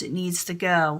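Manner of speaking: ordinary talk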